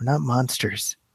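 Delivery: very quiet, teary, on-the-verge-of-tears voice. Retelling a movie scene where a character answers police: imitating a quiet, teary line. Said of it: "and just very quietly, he's like".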